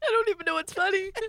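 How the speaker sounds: high-pitched, laughing through tears mid-sentence. Laughing during a recording with another speaker, laughing to tears. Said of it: "I'm crying now".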